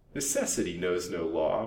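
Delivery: plain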